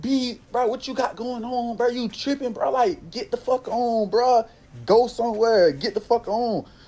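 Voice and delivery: heated angry outburst. Retelling a confrontation after hopping out of the car: retelling an angry outburst. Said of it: "Now I'm hot".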